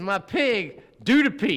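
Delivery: imitated deep Southern accent. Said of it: "real deep Southern".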